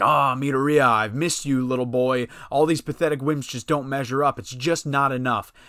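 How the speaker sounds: ordinary delivery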